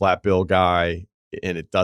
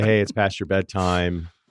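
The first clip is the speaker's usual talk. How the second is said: ordinary talk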